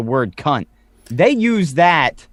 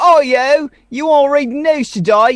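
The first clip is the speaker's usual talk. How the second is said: put-on cockney street kid accent, higher; 11 semitones higher than usual. Describing a cockney accent, voicing a street urchin kid: cockney street urchin voice. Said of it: "you were like some street urchin kid".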